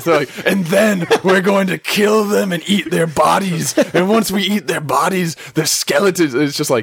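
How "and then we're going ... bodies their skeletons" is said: high, stretched-out, drawn-out taunting voice. Retelling a game cutscene where Krogans taunt from a balcony: imitating Krogans taunting. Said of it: "yelling at you and taunting you".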